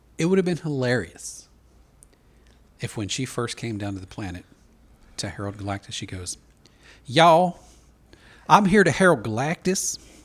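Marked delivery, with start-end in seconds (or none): 7.1-10.0 loud, slow, drawn-out Ozark-style character voice. Joking about how a character could have first spoken: Julia Garner's Ozark character voice. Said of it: "she used her Ozark character".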